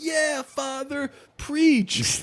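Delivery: high, slow mock cheer.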